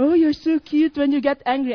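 very loud, sugary, flattering sweet-talk voice. Retelling what a pursuing guy said: imitating flattering tone.

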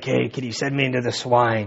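put-on deep gargling demon voice. Imagining the possessed man speaking about the swine, in a deep gargling demon voice. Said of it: "got a deep gargling voice".

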